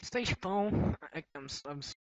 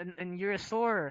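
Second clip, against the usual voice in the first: plain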